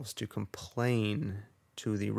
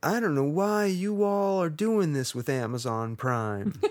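put-on loud, high Southern accent; 6 semitones higher, 5 dB louder than usual. Quoting a rude shopper talking to the cashier, in a Southern accent. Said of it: "it's a Southern".

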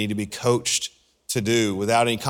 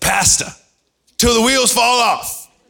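high-pitched, loud preacher cry; 13 semitones higher, 7 dB louder than usual. Quoting a phrase a fellow pastor coined: Pastor Eddie impersonation. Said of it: "My best Eddie impersonation".

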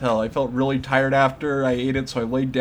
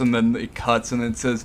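usual speaking voice

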